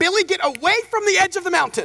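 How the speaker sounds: shrill, high, snapping yell. Describing parents yelling at their kids near a mountain edge: imitating a parent snapping. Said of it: "like snapping at their kids".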